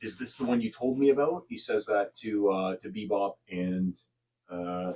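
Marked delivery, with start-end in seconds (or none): 0.0-1.4 soft, hushed, low-key half-whisper. Voicing a robed figure asking companions about a newcomer: half-whispering robed figure. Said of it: "you hear the robed one whisper a little bit".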